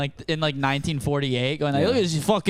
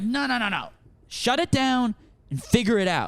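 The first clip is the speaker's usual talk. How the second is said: put-on angry scolding voice, higher; 7 semitones higher than usual. Retelling scolding roommates who podcast late: imitating own angry dad mode. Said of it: "I went full dad mode, and I got mad at them".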